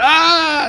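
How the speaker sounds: high, excited yelp. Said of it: "he went".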